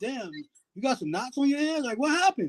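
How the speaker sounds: mocking, sarcastic, sing-song faux-sympathetic concern. Imitating how women ask what happened to a man's hands: imitating sarcastic women. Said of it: "more on a sarcastic".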